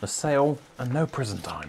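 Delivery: slightly sarcastic, dry, wry tone. Joking about a car sale after fearing prison over wheels: a bit sarcastic. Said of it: "a bit sarcastic".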